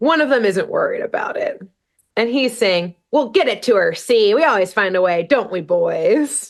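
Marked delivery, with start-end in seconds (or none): 3.1-6.5 put-on old New York mobster accent, drawn-out "boys". Voicing the one unworried member of an arguing group, in an old mobster New York accent. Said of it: "In a classic old mobster New York accent".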